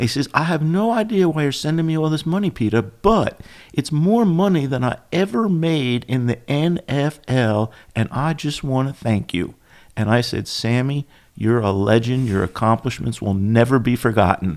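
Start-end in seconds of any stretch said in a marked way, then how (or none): 0.3-9.5 put-on Texas accent, slightly high. Retelling a former NFL player thanking him for money, imitating Sammy's Texas accent. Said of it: "with his Texas accent".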